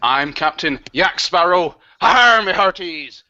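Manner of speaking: pirate character voice. Host reopening the live show introduces the character, Captain Yak Sparrow pirate voice. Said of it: "I'm gonna be a pirate for this whole show".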